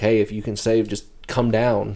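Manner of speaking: plain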